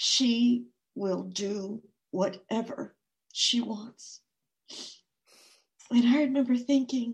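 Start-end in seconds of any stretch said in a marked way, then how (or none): 0.0-4.2 slow words forced out through clenched teeth. Recounting what she said back then: retelling words through clenched teeth. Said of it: "she said through clenched teeth".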